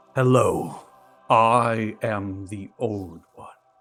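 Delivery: booming, slow echoing voice. Voicing a voice that the players hear in their minds: echoing Old One voice in the mind. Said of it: "As the voice begins echoes through your mind".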